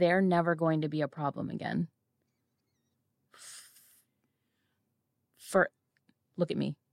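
confidential, pointed, private-sounding tone. Retelling paying the bill, speaking so only she hears, in a lowered, quiet voice. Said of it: "I'm lowering my voice so that just she can hear me".

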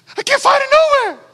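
very high, rushed, frantic, desperate panic. Retelling calling his wife while searching every store: retelling a stressed panic. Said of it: "Just losing it".

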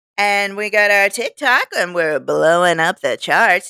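confident, self-assured, convincing, full of conviction. Show the person you are talking to how they are right now, as an impression of them. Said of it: "This is my impression of you right now".

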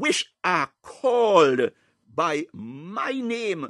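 very slow, emphatic, drawn-out, proclaiming delivery.

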